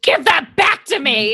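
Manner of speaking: angry, demanding outburst. Playing a demon in a tabletop game, yelling at a woman holding the doll, angry yelling. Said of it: "I'm going to yell at her and say".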